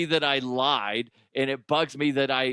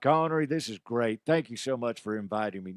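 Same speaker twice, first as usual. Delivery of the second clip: odd, weird put-on cowboy character voice; 3 semitones lower, 3 dB quieter than usual. Playing a character who speaks to Connery about the game, in a weird put-on voice. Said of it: "I can't go back between those two voices".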